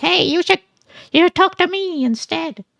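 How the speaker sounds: high-pitched, squawky, yelling bird voice.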